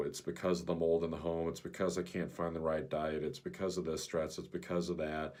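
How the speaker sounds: ordinary delivery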